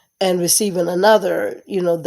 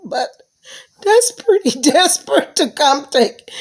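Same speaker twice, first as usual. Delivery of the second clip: talking through laughter, higher and louder; 9 semitones higher, 4 dB louder than usual. Apologizing for laughing while telling a story: laughing while talking. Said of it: "Excuse me for laughing".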